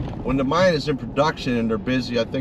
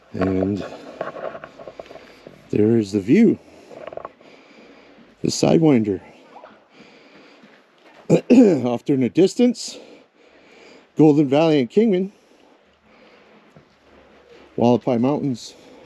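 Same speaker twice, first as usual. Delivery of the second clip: breathless, out-of-breath speech, louder; 5 dB louder than usual. Pointing out the view after a steep climb, out of breath. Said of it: "I'm a little bit out of breath".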